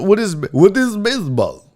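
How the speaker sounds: bad, terrible fake Russian accent. Imagining foreign visitors at a game, voicing one in a terrible Russian accent. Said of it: "It was a terrible accent".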